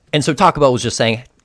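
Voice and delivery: ordinary talk, nothing marked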